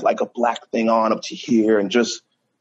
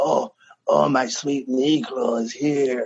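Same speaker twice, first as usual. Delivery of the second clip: hoarse, raspy, very slow, drawn-out drawl; 3 semitones higher than usual. Closing up at the bar, retelling a woman calling out to him, raspy voice. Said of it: "I just hear this like raspy voice".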